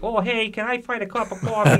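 put-on strange, squeaky, very high voice. Retelling an encounter where someone asked for coffee: weird voice imitating Todd McFarlane. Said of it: "weird voice".

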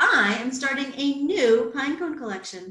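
ordinary delivery

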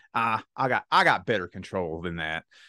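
normal talking voice

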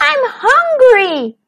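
very high, drawn-out, whiny tone. A companion being a pain to Little Wolf, whining. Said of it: "he whined".

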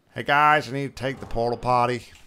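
booming, loud put-on American accent. Greeting the viewers, speaking in a put-on american accent. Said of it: "Why I did that in an American accent".

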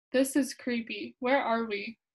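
ordinary talk

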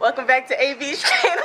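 speech breaking into laughter. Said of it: "Hold on".

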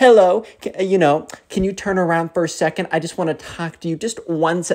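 put-on baby talk, highly patronizing and condescending. Describing how people talk down to you, imitating a condescending babying voice. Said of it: "kind of like a babying voice where they try and baby you, but it's also super, super condescending".

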